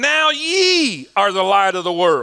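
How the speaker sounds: forceful, emphatic reading with conviction, drawn-out "ye". Leading a congregation in reading a verse aloud: reading with conviction. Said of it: "say it with conviction".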